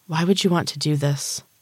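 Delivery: gentle, quiet, soft-spoken voice. Rhea, the sacrifice, questions the man; softly. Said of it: "She asked softly".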